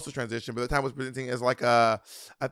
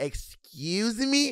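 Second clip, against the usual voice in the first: put-on very thick, laid-on New York accent, high-pitched; 9 semitones higher than usual. Retelling how she answered a man who insulted them: thick New York accent. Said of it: "it's a very thick New York accent".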